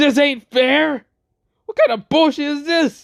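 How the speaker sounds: very high, shrieking scream. Recapping a scene, retelling a character's line: imitating a scream. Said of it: "Crom Crush screams".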